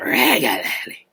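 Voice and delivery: put-on slurred drunk voice, ending smeared into "lelely". Thanking a listener for a nice comment: mock drunk voice. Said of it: "I said that like somebody, mama that's drunk".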